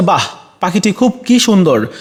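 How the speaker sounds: exclamatory wonder, "wow" with wide pitch range.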